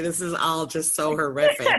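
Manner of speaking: talking through laughter, swooping pitch. Reacting to a grim story about a dog, laughing while talking. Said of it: "I don't know why I'm laughing".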